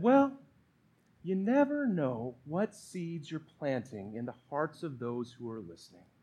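very soft, low, preacherly murmur with swooping pitch. Recalling what the pastor told him, speaker does his Pastor Dan voice. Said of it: "In his best Pastor Dan voice".

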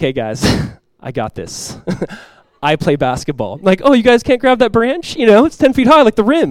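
arrogant, cocky, show-off, swooping voice. Retelling boasting to friends who failed to reach a branch: mock-arrogant bragging. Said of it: "So arrogant and pridefully".

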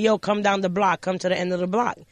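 plain

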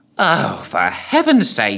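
really rather put out, slow tone. Narrating a story, the ghoul replies, sounding put out. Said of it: "sounding really rather put out".

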